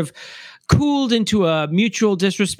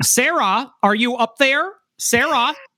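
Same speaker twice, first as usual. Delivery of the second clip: fake American accent, hard r's, pitched up; 6 semitones higher than usual. Imitating a British man doing an American accent, hitting the R's hard. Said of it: "British man doing an American accent".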